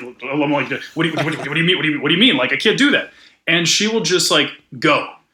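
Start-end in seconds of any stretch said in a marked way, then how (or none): 0.0-3.1 acted-out panicked voice. Retelling his reaction when she wanted to film right away, retelling own panic. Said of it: "I'm panicking".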